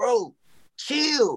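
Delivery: pitched way up, exasperated delivery.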